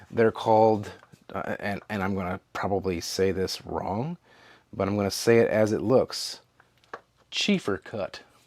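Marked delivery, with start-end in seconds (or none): 7.3-8.1 a little country accent. Reviewing a product and saying its name, with a slight country twang. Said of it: "with a little country twang on it on purpose".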